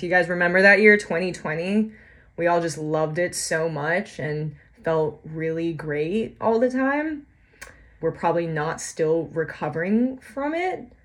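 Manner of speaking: heavily sarcastic, mocking, praising tone. Speaking to listeners about living through the year 2020, sarcastic. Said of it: "you're noticing all the sarcasm there".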